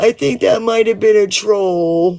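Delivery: put-on high, weepy, tearful crying voice. Retelling what people said on their live stream: imitating someone crying.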